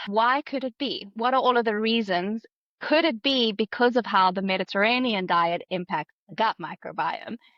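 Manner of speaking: normal talking voice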